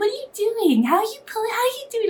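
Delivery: put-on tiny, very high little baby talk. Recalling speaking to him playing with his toy after surgery, in a little baby voice. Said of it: "with my little baby voice".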